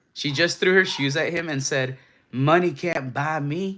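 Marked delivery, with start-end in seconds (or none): 2.4-3.8 slow, laid-on sassy put-on voice. Retelling how she threw her shoes at him, in a mock-sassy voice. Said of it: "I had to do the voice because in my head, she said it in a sassy manner".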